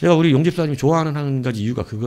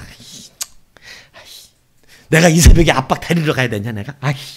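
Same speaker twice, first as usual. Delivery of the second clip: loud, heated, fed-up and annoyed grumbling; 2 semitones higher, 7 dB louder than usual. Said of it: "아들놈이 열받아서 오는 거야".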